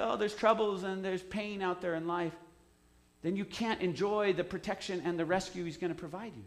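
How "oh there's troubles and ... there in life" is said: usual speaking voice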